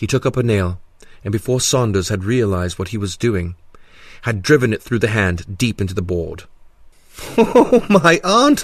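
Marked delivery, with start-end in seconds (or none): 7.4-8.6 wild, hysterical, very high, loud giggling. Having driven a nail through the hand into the board, the man speaks while giggling hysterically. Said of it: "he giggled hysterically".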